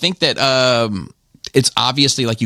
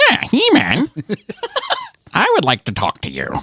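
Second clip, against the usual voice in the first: very high villain voice swooping around in pitch; 12 semitones higher than usual. Listing cartoon villains' voices, doing Skeletor addressing He-Man: Skeletor voice. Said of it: "he has the worst villain voice of all time".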